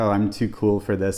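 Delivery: normal talking voice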